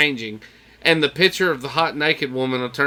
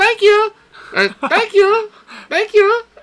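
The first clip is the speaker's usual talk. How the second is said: very high, loud, badly done put-on lady voice; 7 dB louder than usual.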